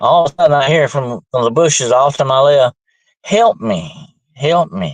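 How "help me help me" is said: very slow, drawn-out put-on woman's voice, crying out. Retelling a cry heard from the bushes at night, imitating a woman's voice. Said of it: "it sounded like a woman's voice".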